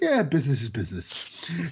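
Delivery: soft, offhand, nonchalant tone. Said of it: "In a very nonchalant sort of way".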